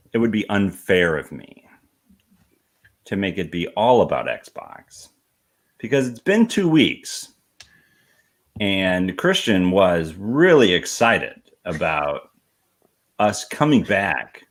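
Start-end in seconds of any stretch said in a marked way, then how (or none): 8.6-14.2 dripping, exaggerated sarcasm in swooping sing-song. Introducing a topic to co-hosts on a podcast: dripping with sarcasm. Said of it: "feel the sarcasm dripping off of him".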